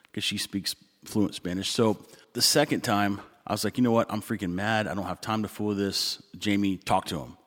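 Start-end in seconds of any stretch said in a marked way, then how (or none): none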